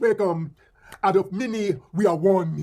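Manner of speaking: imitated, mock Jamaican accent. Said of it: "y'all throw that accent?".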